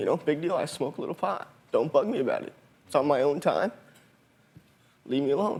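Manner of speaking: speaking through tears, crying while talking. Being filmed for a tv show, a student speaks while crying. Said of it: "Why are you crying?".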